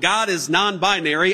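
ordinary talk

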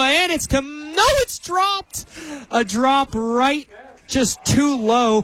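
excited, high voice cracking, stretched out. Calling a dropped pass in the end zone, excited, voice cracking. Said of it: "my teenage boy coming in there with a little voice crack".

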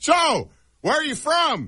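very high, loud, shrill, slow, sing-song voice. Retelling what a man seated across said: imitating someone talking loudly. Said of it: "really loudly".

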